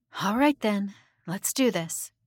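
ordinary delivery

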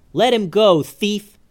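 demanding, high, drawn-out yell. Mallory catches up with the wagon and yells at the thief. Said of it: "she yelled".

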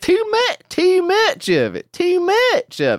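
very high, very slow, drawled hill-country twang. Echoing a speaker in a video: imitating a twangy hill accent. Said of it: "there's a unique twang to this accent".

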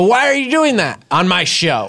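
mock outraged, furious, high-pitched voice. Imagining his reaction to the sketch: imitating a furious Mikey Day. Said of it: "Mikey Day would be furious".

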